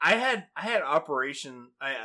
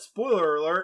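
ordinary talk

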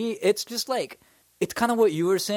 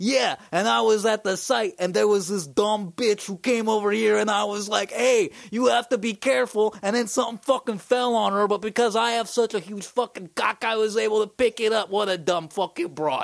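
pitched-up, dim-witted construction worker voice; 5 semitones higher than usual. Speaker does an impression of a dude he thinks is a construction worker. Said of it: "I'm going to do an impression of him".

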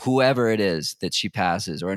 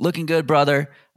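high, friendly, encouraging shout; 6 semitones higher, 4 dB louder than usual. Retelling what a dude in a truck shouted out the window: imitating a shout. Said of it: "just shouts out the window".

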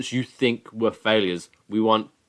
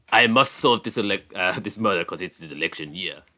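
put-on French detective accent, much lower; 3 semitones lower than usual. Playing along in a group bit about solving a murder: french investigator voice. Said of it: "He sounds like a French investigator".

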